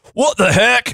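high, crazy, wacky cartoon character voice. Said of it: "That was his crazy voice".

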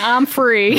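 ordinary talk, nothing marked

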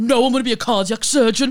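put-on, very loud, high, furious angry snap. Speaker recounts winding up a man who got really angry, retelling an angry retort. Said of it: "he got really angry and just went".

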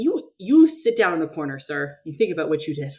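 ordinary talk

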